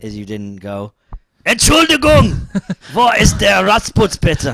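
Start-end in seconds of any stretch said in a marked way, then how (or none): 1.4-4.6 all-out shout, very loud and very high. Saying how a German question should have been asked, shouted loudly. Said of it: "No, I didn't shout at him".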